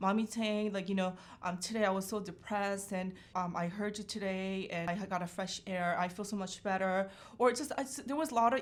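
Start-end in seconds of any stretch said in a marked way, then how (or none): none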